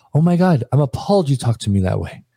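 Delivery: scandalized, affronted, appalled, shocked indignation. Describing women reacting when talked back to, imitating their appalled shock. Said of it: "drop their jaw and look at you like".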